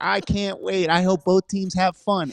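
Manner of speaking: put-on very high-pitched, goofy, innocent kid voice. Podcast hosts joke about a grappler about to get suplexed, doing Little Timmy voice. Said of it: "that's little Timmy".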